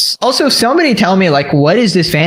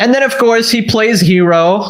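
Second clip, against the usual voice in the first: normal talking voice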